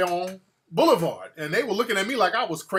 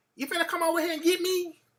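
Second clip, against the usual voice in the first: high, squeaky, cute country voice; 10 semitones higher than usual. The speaker quotes a country girl calling him up: cute squeaky country voice. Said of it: "had the little cute squeaky voice on it".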